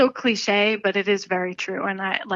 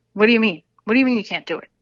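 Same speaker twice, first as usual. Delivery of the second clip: put-on fast, thick, heavy Brooklyn accent; 4 dB louder than usual. Retelling how their dad answered when they said they couldn't do it: imitating dad's heavy Brooklyn accent. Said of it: "He has a very heavy accent".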